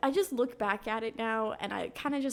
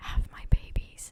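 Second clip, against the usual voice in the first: hushed, voiceless whisper, close to the ear. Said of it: "whisper in my ear".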